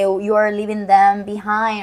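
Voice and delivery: ordinary talk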